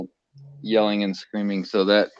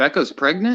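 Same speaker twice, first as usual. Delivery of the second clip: sounding surprised; 8 semitones higher than usual. Hearing someone announce becca is pregnant, surprised. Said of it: "I love that surprise in your voice there".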